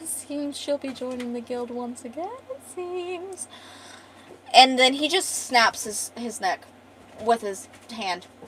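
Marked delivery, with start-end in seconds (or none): 0.0-3.5 soft, slick, smug villain voice. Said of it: "this little slick motherfucker goes".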